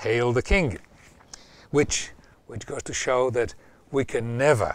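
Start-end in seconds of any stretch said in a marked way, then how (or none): none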